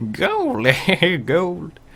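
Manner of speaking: put-on very high, swooping old prospector voice. Copying another speaker's old prospector voice for the word gold: imitating the old prospector voice. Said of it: "I love that voice".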